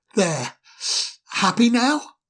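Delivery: tense, tight, strained voice. Narrator reading Ermo's reply after Pooka laughs with glee, strained voice. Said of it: "said Ermo in a strained voice".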